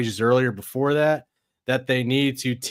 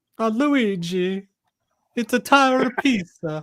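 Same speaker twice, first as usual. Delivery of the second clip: high, slow, drawn-out Italian cartoon-car voice; 10 semitones higher than usual. Imitating one of the Italian cars from the movie Cars. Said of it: "one of the Italian cars, from the movie Cars".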